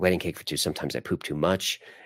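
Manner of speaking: normal talking voice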